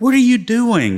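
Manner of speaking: very high, loud shout. Retelling asking a seated soldier over loud engines: retelling a yell over engine noise. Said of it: "I'm yelling at him over the".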